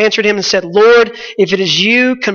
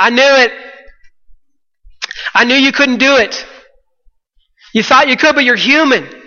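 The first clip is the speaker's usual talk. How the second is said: half-yelled, scolding tone with a mild yell; 4 semitones higher than usual. Speaker imagines being in the boat with Peter: acting out yelling at Peter. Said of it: "I'm yelling at Peter".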